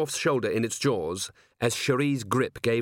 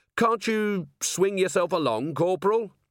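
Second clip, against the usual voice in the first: raised, pitched-up calling voice; 7 semitones higher than usual. Vimes calls to the corporal hanging above the molten tallow, raised voice. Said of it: "Vimes raised his voice".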